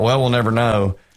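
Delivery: plain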